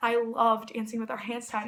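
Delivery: ordinary talk, nothing marked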